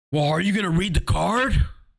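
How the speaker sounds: mock aggressive, hostile tone. Imitating the guy to the left at the card table after a spell: mimicking a really aggressive tone. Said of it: "Like in a really aggressive tone".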